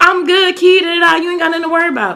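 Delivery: laughing speech. Retelling a phone call after he got shot: imitating someone laughing while talking.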